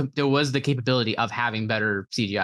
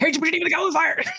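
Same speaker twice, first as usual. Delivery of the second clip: breakneck, very fast, very high-pitched gabble. [name], asked to try the Goblet of Fire line, saying it really fast. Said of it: "I gotta say it like really fast".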